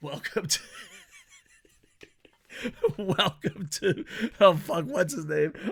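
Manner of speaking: laughing through it, swooping pitch. Welcoming a player to the club, the speaker is laughing at own joke. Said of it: "Sorry, I was laughing at my own joke".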